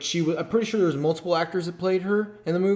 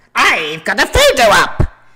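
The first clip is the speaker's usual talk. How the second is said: very loud, squeaky, swooping leprechaun-like voice; 5 semitones higher, 11 dB louder than usual. Fan acting out a panel member's intercom announcement, leprechaun-like voice. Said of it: "I sound a little bit more like the leprechaun".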